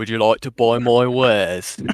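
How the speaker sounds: sinister British-accented character voice. Trying a video game merchant impression: Resident Evil 4 trader impression. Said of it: "the Resident Evil Four traitor".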